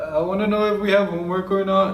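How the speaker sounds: put-on nervous, halting, high-pitched squeaky kid voice.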